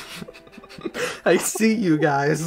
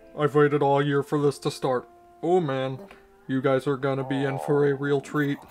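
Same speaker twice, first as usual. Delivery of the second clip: low, flat, monotone robot voice; 4 semitones lower than usual. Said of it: "you sound like the robot from, uh, Colonel Sanders".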